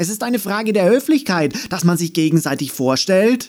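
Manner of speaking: high-pitched, quick calling out. Andi calls after the Non-Unicorn as it trots off to its hut, calling after it. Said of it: "rief sie ihm hinterher".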